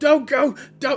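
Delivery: put-on angry young boy's voice. Voicing a caged boy begging the party not to leave: angry boy voice. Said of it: "you almost begin to hear, like, anger come from his boy, voice".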